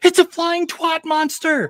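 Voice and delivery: shrill, very high-pitched shrieking scream. Retelling a movie-night moment, imitating a friend screaming. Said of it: "He screamed out saying".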